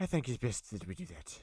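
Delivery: put-on Scottish-Irish accent. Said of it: "the Scottish and, like, uh, uh, Irish accent".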